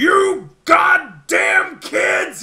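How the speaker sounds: very loud, very high, booming, shrill, furious bellow. Narrating a game scene where a voice yells at some kids, booming yell. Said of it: "you hear like a booming voice yell".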